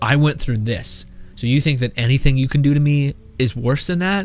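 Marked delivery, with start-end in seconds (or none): none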